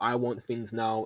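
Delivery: ordinary talk, nothing marked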